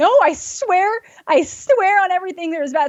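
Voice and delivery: play-acted, high, frantic, freaked-out pleading. Speaker retells insisting that something is in the house: retelling own panic. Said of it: "So I'm like freaking out".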